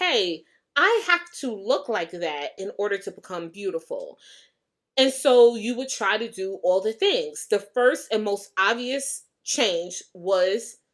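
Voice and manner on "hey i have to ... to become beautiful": normal talking voice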